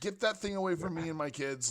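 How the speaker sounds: frantic, terrified, panicked, high-pitched screaming. A woman in the middle of the street screaming at the player, screaming in panic. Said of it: "she is screaming at you now".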